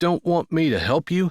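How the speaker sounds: ordinary delivery, nothing marked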